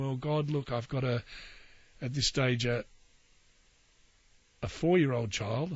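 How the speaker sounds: ordinary delivery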